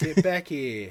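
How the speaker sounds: put-on London accent, film-star style. Doing an impression while playing a game: Michael Caine voice. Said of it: "I'm Michael Caine".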